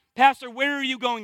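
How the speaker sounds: usual speaking voice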